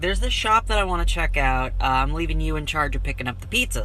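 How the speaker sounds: ordinary delivery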